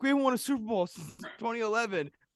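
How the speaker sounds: very high, loud, angry outburst. Retelling what a pissed-off Packer fan said, retelling an angry fan's rant. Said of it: "this other guy was pissed".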